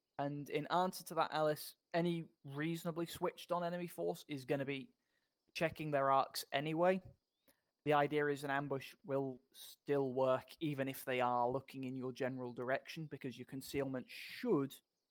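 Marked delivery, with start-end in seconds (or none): 14.1-14.7 strong stress on the word "should". Explaining how concealment works in an ambush: stress on SHOULD. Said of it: "emphasis on should".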